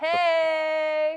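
"hey" said with a put-on inflection. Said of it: "I'm sure not with that inflection".

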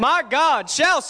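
bold, confident delivery. Leading others in repeating a scripture, bold, confident declaration. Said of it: "say it with some boldness and some confidence".

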